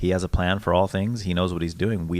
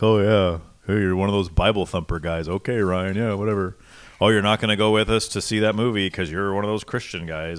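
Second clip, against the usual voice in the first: light, teasing, mocking ribbing, never mean; 3 dB louder than usual. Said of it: "mock and ridicule you in a sense".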